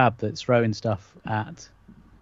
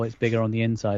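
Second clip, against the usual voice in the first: ordinary delivery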